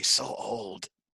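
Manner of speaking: hushed, private aside muttered under the breath. In a tabletop game, the character shies behind Rogar, muttered under breath. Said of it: "under my breath say".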